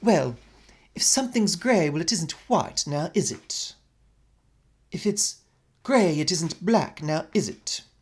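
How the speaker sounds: put-on pompous British accent.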